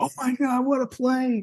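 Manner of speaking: very high-pitched, thrilled, excited screaming. Retelling a man yelling and screaming upstairs over a play, imitating excited yelling. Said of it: "he was like yelling and screaming like".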